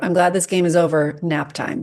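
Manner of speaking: plain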